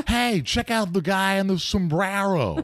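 very high-pitched announcer voice. Telling a story about his early impressions, he performs a sports announcer he used to imitate, in an old baseball announcer impression. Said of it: "I was doing Harry Carey before, the announcer for the Cubs".

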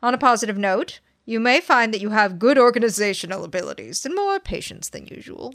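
Southern accent with a formal, lawyerly speaking style. Reading a passage aloud to the other speaker, in a southern lawyer voice. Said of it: "you read that like a Southern lawyer".

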